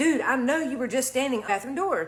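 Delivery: ordinary talk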